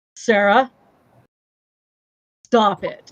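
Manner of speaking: dead-serious, low, dropped-down grave tone. Recalling getting the low voice from Juana, in Juana's low voice. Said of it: "the low voice Juana".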